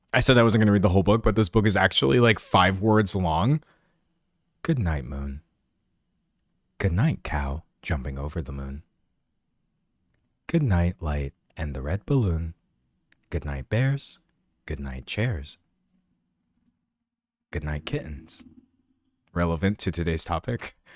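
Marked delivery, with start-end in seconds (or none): 4.6-18.4 low, soft, calm audiobook reading voice. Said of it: "That's literally how every, like, audiobook reader does it".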